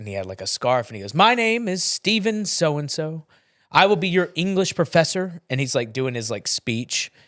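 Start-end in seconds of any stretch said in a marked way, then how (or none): 1.1-5.4 really animated, high-pitched delivery. Recalling an English professor introducing himself to the class, imitating Steven's animated delivery. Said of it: "this guy's like really animated".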